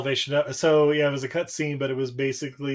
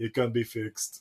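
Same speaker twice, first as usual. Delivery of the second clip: put-on German doctor accent, quieter; 4 semitones lower, 5 dB quieter than usual. Retelling a deleted movie scene, as the german doctor, in a german doctor accent. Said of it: "this like German doctor guy kind of looks over and goes".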